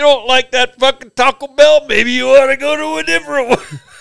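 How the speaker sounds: loud, very high pro-wrestling promo shout. Imagining what Matt would say back: Macho Man Randy Savage-like voice. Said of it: "You sound like Macho Man Randy Savage".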